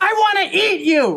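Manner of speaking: full-throated, very high, shrill yell. Told by a scene partner to yell it, an actor yells the line. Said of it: "But yell it".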